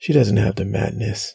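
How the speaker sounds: plain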